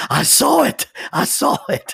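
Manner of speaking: loud, high excited outburst.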